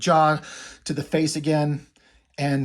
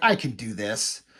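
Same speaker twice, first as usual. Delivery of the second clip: mock slightly cocky, self-assured, confident boastful tone; 5 semitones lower, 4 dB quieter than usual. Retelling a line from a fight scene: imitating a cocky Oliver. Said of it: "He's getting a little cocky".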